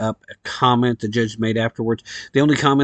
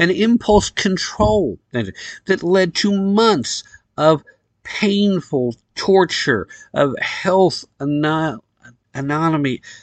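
furious, tongue-tied, stumbling speech, pitched up; 6 semitones higher than usual. Ranting about a case, getting angry and tongue-tied. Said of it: "I'm getting tongue-tied. I'm getting so angry".

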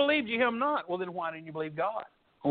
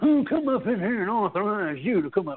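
condescending, snooty, superior-sounding put-on voice. Reading a Bible verse, voicing the challenge to the preacher in a Thurston Howell III voice. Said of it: "the voice of Thurston Howell the third".

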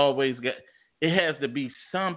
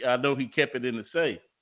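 normal talking voice

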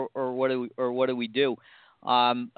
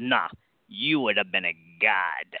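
great deep Italian baritone voice; 4 semitones lower than usual. Speaker retells the Pompeii tour guide answering a guest: great Italian baritone voice. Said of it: "this great Italian baritone voice says".

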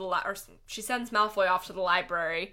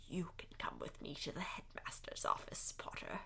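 menacing, dangerous, very hushed whisper; 2 semitones lower, 15 dB quieter than usual. Recounting a scary scene from the book, in a dangerous Umbridge voice. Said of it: "in her most dangerous voice ever".

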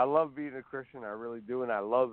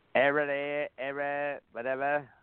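put-on old Boston politician voice, pitched higher; 4 semitones higher than usual. Doing old voices for fun, in a John F. Kennedy impression. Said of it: "that's my John F. Kennedy".

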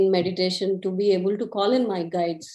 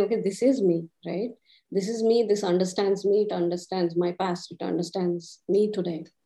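plain

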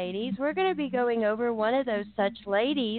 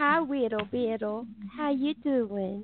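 put-on soft cooing baby talk. Describing a man who loved being baby-talked to, showing it in baby talk. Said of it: "baby talked to".

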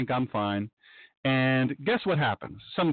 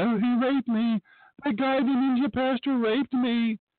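tearful, sobbing outcry by a crying woman; 9 semitones higher than usual. Telling a story, the speaker acts out the woman on the floor: imitating a woman crying. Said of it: "And she's crying".

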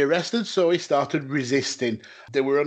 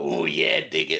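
rough, creaky voice in wrestling announcer style. Asked to do the voice, speaker manages a catchphrase; Savage impression. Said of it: "I can't do a good Savage. I can do a".

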